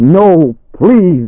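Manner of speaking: shouting, very high-pitched. A man hitting at the closing darkness cries out, shouting. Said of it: "he shouted".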